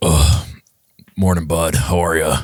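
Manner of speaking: mock hungover voice, slow and dragging. Retelling a friend's morning phone call: imitating Ethan, hungover. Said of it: "kinda hungover sounding and he's like".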